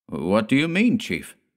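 ordinary delivery, nothing marked

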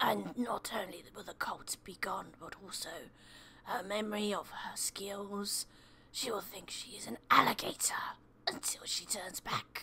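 soft, unvoiced, hissing monster voice under the breath.

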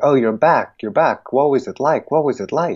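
put-on high, excited, eager little girl voices.

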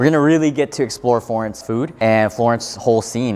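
normal talking voice

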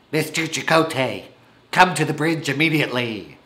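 put-on commanding starship captain voice. With something in their throat, the speaker calls an officer to the bridge: Captain Janeway impression. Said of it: "my Captain Janeway impression from Star Trek Voyager".

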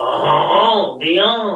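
put-on French accent, laid on for show. Pronouncing the name Dionne after offering to try it, put-on French voice. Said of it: "Should I say it in my French voice?".

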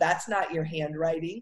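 bratty, snotty, snide, snarky tone. Retelling a girlfriend's call about a birthday card, imitating her snotty voice. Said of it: "In only that snotty voice a best friend can do".

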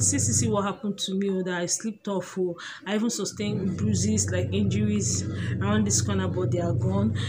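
ordinary talk

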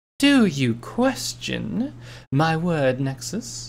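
cold, swooping, menacing hissed voice. A character leans in close and challenges the other's doubt, cold menacing hiss. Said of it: "Nightmare Moon hissed out, ... glaring at him coldly".

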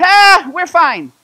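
very high, very loud yelling. Telling a story about sledders who ignored the directions, retelling their yelled reply. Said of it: "they yell back".

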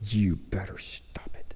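hushed, quiet whisper. Retelling a mother's warning in a church service: imitating a whispered warning.

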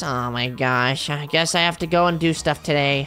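soft, mopey, put-on gloomy sad voice. Doing an impression of sadness for a friend, sad voice. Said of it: "This is my impression of sadness".

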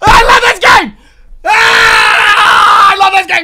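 excited shouting. Reacting to a monster roaring on screen: excited shouting. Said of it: "I'm sorry. I'm sorry".

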